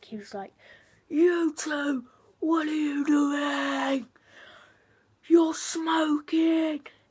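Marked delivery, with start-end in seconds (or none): 1.1-6.8 furious, very loud, pitched-up bellowing yell. Retelling a strict teacher catching pupils smoking: imitating a furious teacher. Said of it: "he went absolutely ballistic".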